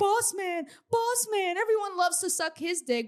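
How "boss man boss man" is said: high, gushing, mock fawning fan hype. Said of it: "And everyone's like".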